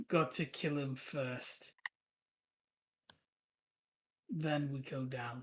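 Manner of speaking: flat monotone, two voices merged into one. Narrator voicing a character who pauses before going down the steps, flat. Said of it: "that voice that's a mix of hers and Gustav's says flatly".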